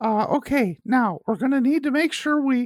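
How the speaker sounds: very high-voiced man, pitch pushed way up. Speaker recalls what a man new at their school would say, mimicking his high voice. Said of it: "I'll do a pretty good impression".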